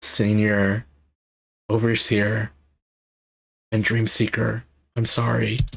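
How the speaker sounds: slow, heartfelt voice, emotion showing. Reading a game character's apology aloud in translation: getting emotional. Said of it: "getting emotional now".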